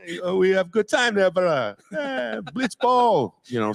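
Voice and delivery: Hawaiian pidgin accent, pitched very high. Voice actor demonstrating the accent he came up with for a role; Hawaiian pidgin accent. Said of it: "kind of like a Hawaiian pidgin accent".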